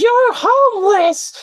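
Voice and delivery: very high, shrill, high-pitched screech. Retelling an angry woman's insult in a park: imitating a woman yelling. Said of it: "she yells out".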